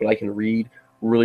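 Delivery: plain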